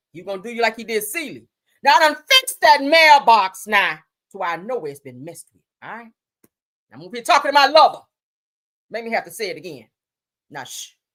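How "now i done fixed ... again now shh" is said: loud, bossy, raised voice. Imitating a film character telling someone to hush: imitating Mister from The Color Purple. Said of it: "That's what he told your ass".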